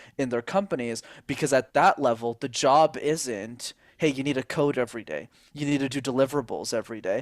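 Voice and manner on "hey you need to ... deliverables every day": ordinary talk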